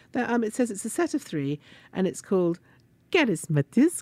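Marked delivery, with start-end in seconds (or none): 1.9-4.0 poor put-on Swedish accent. Reading a rug set's name aloud on a show, in a bad swedish accent. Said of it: "my Swedish accent is not very good".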